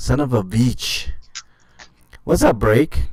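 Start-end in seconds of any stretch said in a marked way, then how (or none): 0.0-1.1 put-on heavy, thick Belgian French accent. Repeating a grandmother's old saying: heavy French accent. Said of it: "had a very uh, heavy French accent".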